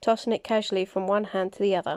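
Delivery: ordinary delivery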